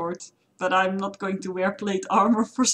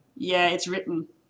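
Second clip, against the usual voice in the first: heavy, knowing, sardonic sarcasm; 4 dB quieter than usual. Voicing Anna, who looks at the unreadable writing: sarcastic. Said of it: "Anna kinda sarcastically says".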